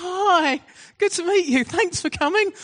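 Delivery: mock very high, jittery, nervous voice. Retelling a preacher greeting the assessor before the service: imitating a nervous greeting. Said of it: "It was like a nervous first date".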